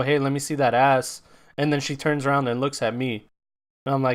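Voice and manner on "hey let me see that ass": usual speaking voice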